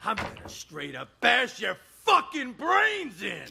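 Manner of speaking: furious, enraged shouting. Acting a manic patient threatening people outside a locked room: furious shouting. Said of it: "I'm gonna need you to calm down".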